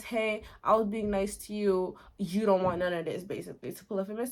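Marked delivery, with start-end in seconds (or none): 0.0-3.2 put-on angry hero voice. Retelling how the hero confronts the Cyclops: imitating an angry Odysseus. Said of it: "he gets really mad".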